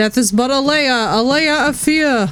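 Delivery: put-on street-corner New York accent. Reading a line from the game aloud to make it less scary: New Yorker accent. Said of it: "I have to say it in a New Yorker accent".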